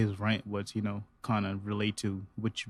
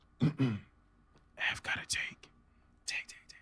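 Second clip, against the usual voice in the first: soft asmr whisper, quieter; 3 semitones higher, 8 dB quieter than usual. Joining another speaker's whispered joke: ASMR whispering. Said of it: "Don't A S M R while I'm A S M R".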